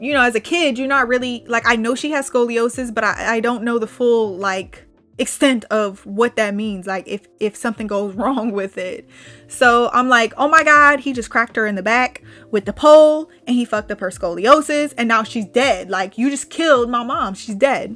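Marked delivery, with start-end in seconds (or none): none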